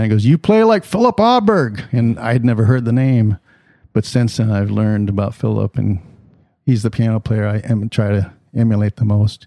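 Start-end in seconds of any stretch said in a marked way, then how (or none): 0.2-1.8 high, loud called-out yell. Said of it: "he yelled down".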